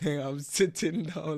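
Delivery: pretend stubborn, slowed down.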